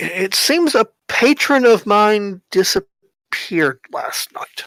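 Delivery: nervous halting voice. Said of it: "you can tell he's nervous. He's sweating bullets nervous".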